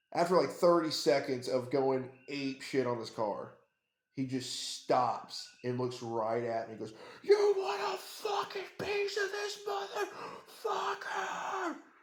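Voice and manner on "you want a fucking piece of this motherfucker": mock very high, drawn-out, top-of-the-lungs scream. Retelling how a man with a bat screamed at the speaker: imitating someone screaming. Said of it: "He just screams this at me at the top of his lungs".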